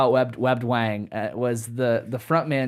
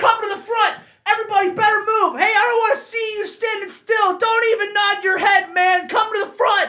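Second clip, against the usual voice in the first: put-on shouted call, higher pitch; 4 dB louder than usual. Retelling how an opening band kept yelling at the crowd: imitating a band yelling at the crowd. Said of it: "This sounds like, uh, [name] doing a [name]".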